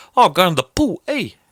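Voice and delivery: New Zealand accent, pitched very high. Discussing accent differences, the speaker does a Kiwi accent. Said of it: "the Kiwi thing is".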